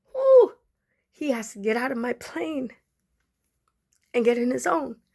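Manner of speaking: voice catching, choking up, on the edge of tears. Talking on TikTok about someone growing distant, about to cry. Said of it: "I'm gonna cry".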